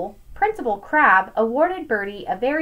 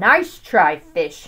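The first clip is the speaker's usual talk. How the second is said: low growling creature voice; 5 semitones lower, 4 dB louder than usual. The shark replies to Birdie the fish, growled. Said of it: "Growled the shark".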